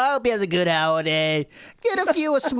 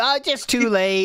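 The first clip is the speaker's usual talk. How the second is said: plain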